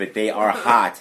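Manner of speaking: slow, with stress on hot. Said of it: "And I stress the word hot".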